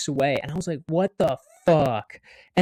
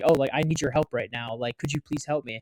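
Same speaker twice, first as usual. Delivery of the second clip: sincere tone, lower and quieter; 3 semitones lower, 5 dB quieter than usual. Retelling asking a man for help with a falling pallet, retelling a sincere plea. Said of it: "And I like said it really genuinely".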